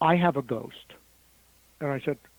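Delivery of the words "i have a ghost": very quiet, soft speech. Retelling what a woman in the car confided: imitating someone speaking very quietly. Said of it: "she said very quietly".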